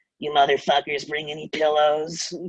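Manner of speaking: voice like a storybook witch. Retelling what the lady who opened the apartment first said to them, in a witch-like voice. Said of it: "looked and sounded like a witch".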